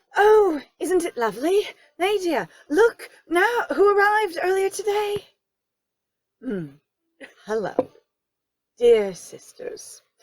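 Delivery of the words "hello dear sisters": low, dry, expressionless deadpan delivery. Playing a character greeting the sisters on arrival, deadpan. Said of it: "Just deadpan".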